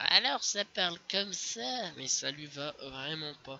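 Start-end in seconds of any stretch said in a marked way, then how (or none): 0.0-1.9 put-on slow, high old man's voice. Describing the crew's favourite commander's voice: old man's voice. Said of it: "C'est une voix de vieux".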